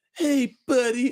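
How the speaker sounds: put-on squeaky, very high, annoying child's voice, taunting. Complaining about a kid in an online game, quoting him: imitating a kid's voice. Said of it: "that fucking kid, that voice".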